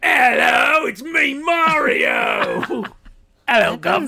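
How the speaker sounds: put-on British accent, loud and very slow. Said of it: "his British voice in it".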